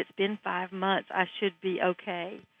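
embarrassed, ashamed, hushed half-whisper. Retelling what a woman at a conference said: imitating a half-whisper. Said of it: "she whispered".

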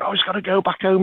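offhand, casual character voice, pitched high.

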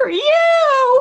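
high, loud screaming.

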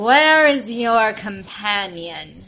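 slow, loud, authoritative.

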